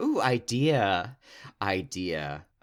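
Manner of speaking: acted-out delighted, gleeful, drawn-out voice. Retelling a film heroine's sudden realization: imitating a gleeful character. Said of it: "look of glee on her face".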